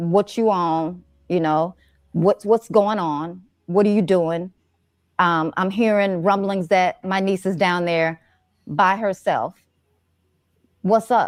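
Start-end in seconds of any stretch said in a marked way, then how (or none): none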